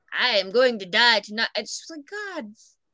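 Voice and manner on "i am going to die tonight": mock vintage horror movie voice. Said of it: "perfect Bela Lugosi impression".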